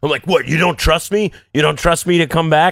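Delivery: put-on yelling. Recalling texting him while drunk over a bar tab, acting out their past self: retelling a shout. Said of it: "I start shouting at him".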